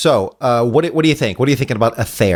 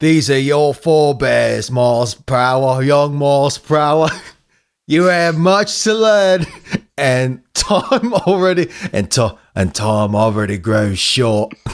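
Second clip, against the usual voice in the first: put-on Australian accent the whole way. Redoing the same line in different styles, deliver it in an australian accent. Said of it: "We got to do Aussie".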